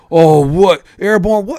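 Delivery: very loud, high drill sergeant bark. Retelling how the sergeants spoke to recruits: imitating how the sergeants talked. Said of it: "that's how they would talk".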